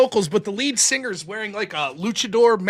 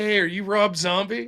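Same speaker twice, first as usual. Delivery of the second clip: imitated drunk talking. Retelling meeting someone in an elevator while drunk: imitating his own drunk speech. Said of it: "And I'm all drunk".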